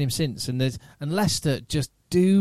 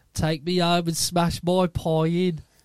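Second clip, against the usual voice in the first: put-on Birmingham accent, sort of Brummie; 3 semitones higher than usual. Retelling a woman overheard on a bench speaking to him, sort of Brummie accent. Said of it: "it was a sort of Brummy accent".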